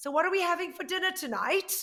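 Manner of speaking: put-on British accent, very high-pitched and loud. Retell hearing someone speak up behind you in Whole Foods, in a British accent. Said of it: "this British accent behind me going".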